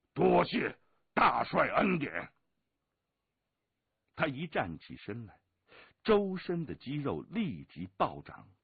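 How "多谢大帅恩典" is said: high, loud, gleeful shout with rough edge. Narrating a story, a man thanks the army commander after his nod, joyful shout. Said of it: "乌木恒欢然大叫".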